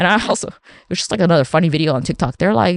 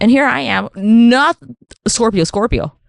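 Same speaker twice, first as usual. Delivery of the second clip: ordinary talk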